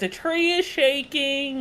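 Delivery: put-on, very high, drawn-out, all-out alarm yell. Describing shouting so the whole party can hear, retelling a yell. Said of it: "I'm yelling at the top of my lungs".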